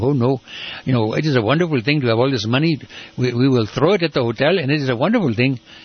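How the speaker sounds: comic, put-on Indian accent. Retelling how the speaker criticized a hotel development to the council, in an indian accent. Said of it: "by using an Indian accent".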